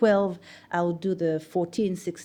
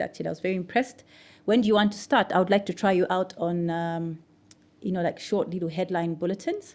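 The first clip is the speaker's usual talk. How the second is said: usual speaking voice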